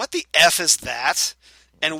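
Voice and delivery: slow, loud, drawn-out contemptuous scorn, acted. Recapping a scene, quoting a woman's remark to a man: retelling a disdainful remark. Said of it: "looks him over with disdain and goes".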